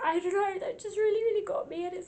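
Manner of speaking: high-pitched voice breaking with tearful crying. A speaker says what really got to them, already crying. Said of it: "I'm already crying".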